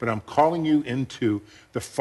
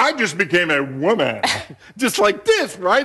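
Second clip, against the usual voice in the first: put-on, dramatic, loud, high theatrical delivery; 6 semitones higher, 5 dB louder than usual. Retelling what a theatrical daughter said to a server: imitating someone speaking loudly. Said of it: "she said it loud enough".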